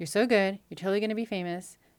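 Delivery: put-on deadpan voice. Retelling how each friend praised her, now Shoshana's put-on deadpan delivery. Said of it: "in her deadpan way".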